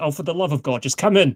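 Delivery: severe, stern tone. Narrating a scene, voicing someone who tells the visitors to come in, stern voice. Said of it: "a stern voice says".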